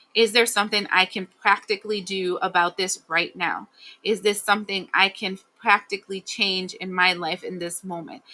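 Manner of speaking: plain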